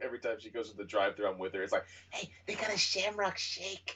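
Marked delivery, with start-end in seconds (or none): 2.1-4.0 very high-pitched mother voice. Imitating mom spotting a Shamrock Shake at the drive-thru: imitating mom. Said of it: "You sound like my mom".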